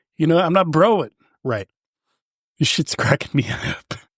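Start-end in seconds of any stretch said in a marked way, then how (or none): 2.6-4.0 cracking up, laughing while speaking mid-sentence. Speaker can't stop laughing at their own talk, laughing while speaking. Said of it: "it's making me laugh".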